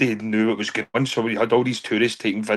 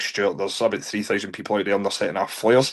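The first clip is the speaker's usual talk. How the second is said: ordinary talk, nothing marked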